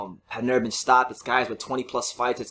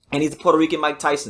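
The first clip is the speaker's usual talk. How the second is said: usual speaking voice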